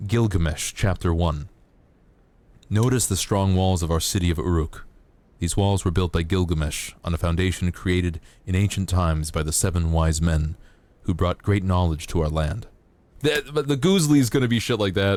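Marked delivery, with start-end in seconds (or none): 0.0-12.7 very calm reading voice, much lower. Demonstrating a reading for people who like voices for sleeping, very calm reading. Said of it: "I very calmly read in my voice".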